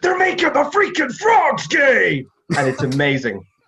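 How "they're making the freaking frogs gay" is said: very high, loud, shrieking, screaming rant. Describing a conspiracy theorist's famous rant to the camera, Alex Jones screaming. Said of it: "turns to the camera and screams".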